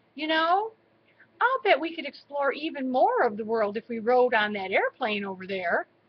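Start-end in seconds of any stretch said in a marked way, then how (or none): none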